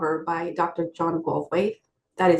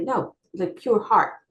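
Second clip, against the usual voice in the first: mock very stern, firm tone; 3 semitones higher than usual. Retelling a dream in which Rama corrects the speaker, imitating a stern voice. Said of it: "very stern".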